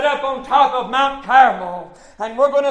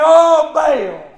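put-on loud, desperate pleading outcry; 3 semitones higher, 5 dB louder than usual. Retelling the prophets of Baal calling on their god: imitating people crying out to Baal. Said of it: "I still crying".

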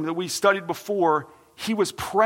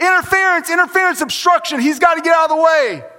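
loud, high, urgent, protesting yell; 9 semitones higher, 7 dB louder than usual. Retelling a call shouted at a softball game: imitating own yelling. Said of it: "I start yelling".

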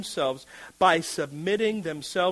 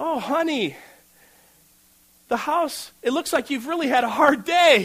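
sweet, caring voice, pitched up and raised; 7 semitones higher, 6 dB louder than usual. Demonstrating for listeners how to greet the head of the home, in a sweet tone. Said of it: "You see the sweet tone?".

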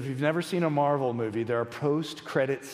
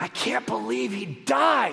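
mock loud whisper, much higher pitched; 8 semitones higher, 3 dB louder than usual. Speaker retells their daughter's words during the film, imitating a loud whisper. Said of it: "whispers in a loud whisper".

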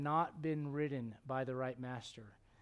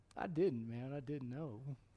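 slow, goofy Arkansas drawl; 3 dB quieter than usual. Act out a missionary answering how he knew he was called, in Brother Dobbins' goofy Arkansas accent. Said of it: "Goofy. Arkansas accent".

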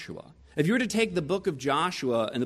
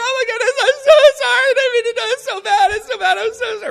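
very high, very loud put-on sobbing and weeping; 14 dB louder than usual. Recounting going to the parents to say sorry: retelling fake weeping. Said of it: "I started just weeping".

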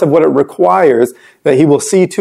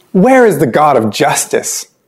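put-on swooping, cynical, accusing tone. Reading aloud the people's question against god: imitating a cynical accusation. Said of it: "And I'm reading it with a tone".

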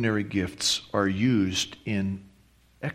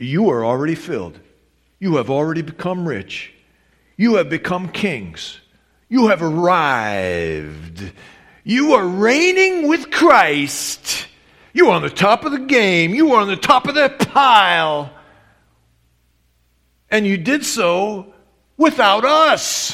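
play-acted very loud, high, booming, swooping, dripping sarcasm; 10 semitones higher, 9 dB louder than usual. Explaining a letter to the Corinthian believers, retelling dripping sarcasm. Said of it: "The rest of this paragraph is dripping with sarcasm".

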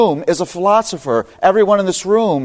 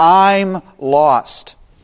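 mildly raised voice with slightly more push. Retelling being lost and repeating it to an unresponsive man, retelling saying it louder. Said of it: "And so I said more loudly".

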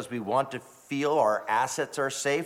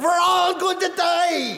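put-on very high, shrill screaming, heavy German accent; 6 dB louder than usual. Retelling a flight attendant's cry as the plane shook, put-on screaming german accent. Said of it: "screamed out with a thick German accent".

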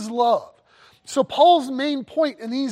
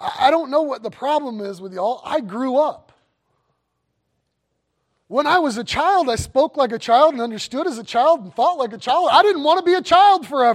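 mock half-kind, half-sarcastic, gently chiding talk. Paraphrasing Paul's words to the church at Corinth: imitating Paul, kindly sarcastic. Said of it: "Paul sort of kindly and sort of sarcastically says".

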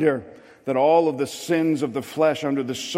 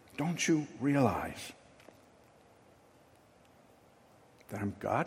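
acted whisper, put-on whispering voice, quieter; 3 semitones lower, 11 dB quieter than usual. Voicing god's gentle reassurance to the congregation: acting out a whisper. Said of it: "He whispers".

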